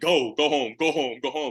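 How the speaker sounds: booming big voice. Retelling how he sent the football players home, in his big voice. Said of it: "he had his big voice".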